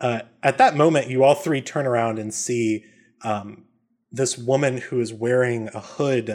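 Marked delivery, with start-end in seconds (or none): none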